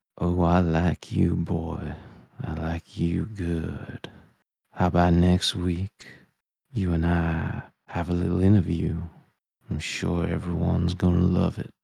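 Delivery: small, little voice in a hushed whisper. A character sitting in the gym hears a voice start to whisper; whispering little voice. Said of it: "you do hear a little voice start to whisper".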